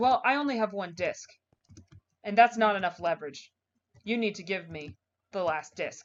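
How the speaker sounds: usual speaking voice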